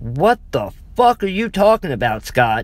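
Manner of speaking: furious outburst, angry, loud and fast. Answering Scott's account of walking in circles, the narrator is demanding angrily. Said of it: "I demanded angrily".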